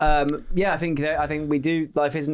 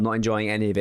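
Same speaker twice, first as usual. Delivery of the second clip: normal talking voice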